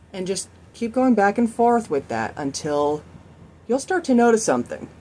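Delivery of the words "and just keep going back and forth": ordinary delivery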